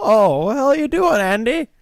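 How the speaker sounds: squealed high and loud. Greeting someone named Andy: worst Don Knotts impression. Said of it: "That's the worst Don Knotts impression I've ever heard".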